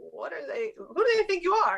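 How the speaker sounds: high, laughing disbelief. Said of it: "and they're like".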